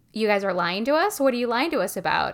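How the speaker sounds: ordinary delivery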